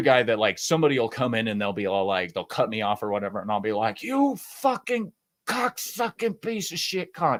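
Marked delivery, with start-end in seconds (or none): 4.0-7.4 play-acted high, shrill, furious, drawn-out screaming. Retelling being cut off in traffic: imitating own road rage scream. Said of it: "I'm the screamer".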